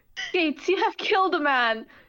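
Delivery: thrilled, eager delivery. A character tells gates he has killed a man, excited. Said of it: "Why do you sound excited about that?".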